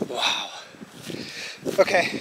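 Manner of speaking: soft, breathy, winded, breathless exclamation. Walking along mountain areas near the house, talking to viewers: out of breath. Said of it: "I am so out of breath right now".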